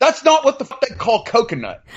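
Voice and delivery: very high-pitched, indignant ranting delivery. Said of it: "I was like".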